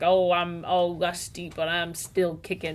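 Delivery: normal talking voice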